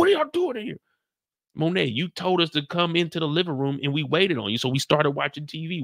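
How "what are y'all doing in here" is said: put-on, very high, scolding yell. Retelling how Monet came downstairs and yelled at everyone: imitating someone yelling. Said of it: "She yelling".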